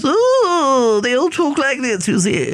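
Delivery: upper-class accent. Showing how upper-class people talk, class by class: upper-class accent. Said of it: "Name a class and I'll give you their accent".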